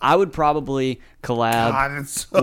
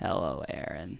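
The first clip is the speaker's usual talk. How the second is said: creepy killer voice, much lower and quieter; 7 semitones lower, 13 dB quieter than usual. Chatting about horror movie villains' voices, doing a Ghostface voice. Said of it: "That's pretty good, isn't it?".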